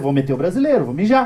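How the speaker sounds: ordinary talk, nothing marked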